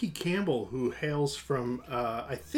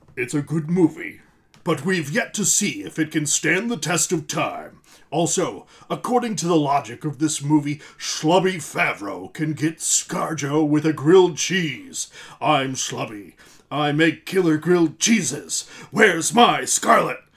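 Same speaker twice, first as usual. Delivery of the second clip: put-on rich, deep movie trailer voice, louder; 7 dB louder than usual. Reading out a comment from Paul Roman in a rich deep voice. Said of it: "I've practiced that voice for Paul".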